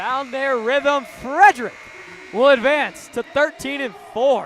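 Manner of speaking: loud, high, excited shout.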